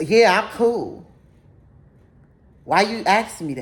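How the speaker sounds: acted attitude, irritated tone. Retelling a date's defensive answer after being asked if he's cool: imitating someone with an attitude. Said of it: "you're acting throwed off".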